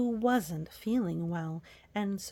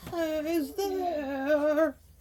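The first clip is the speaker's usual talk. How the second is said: raspy, hoarse, pitched-up wolf voice, drawn-out "there"; 7 semitones higher than usual. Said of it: "frightened at the hoarse voice of the wolf".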